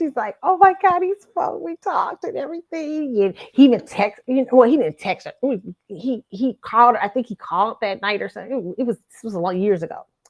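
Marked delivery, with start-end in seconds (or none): 0.4-3.2 thrilled, excited, high-pitched gushing. Retelling her reaction after he spoke to her: imitating someone excited. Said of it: "she's all excited".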